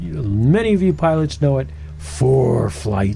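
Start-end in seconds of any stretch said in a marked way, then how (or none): 2.0-3.2 dramatic announcer delivery, much lower. Hosts introducing a studio guest, delivering a dramatic read. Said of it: "Notice the dramatic read there".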